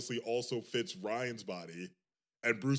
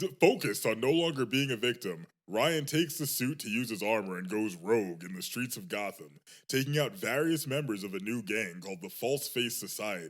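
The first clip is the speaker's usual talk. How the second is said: put-on narrator-style reading voice; 4 dB louder than usual. Speaker reads a show's episode synopsis aloud in a narrator voice. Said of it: "Do you want me to do the narrator voice?".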